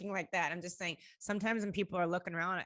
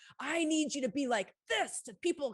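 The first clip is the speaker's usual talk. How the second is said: high, screamed, full of force; 8 semitones higher, 3 dB louder than usual. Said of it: "and he screamed at me".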